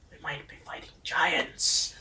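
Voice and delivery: excited, giddy whisper bubbling with glee. Whispering to a party member in a game scene: giddy whisper. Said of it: "kinda whisper giddily".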